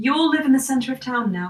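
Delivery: extremely loud, booming, declaring voice. A voice suddenly addresses the people of the town: very loud voice. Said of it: "a very loud voice says".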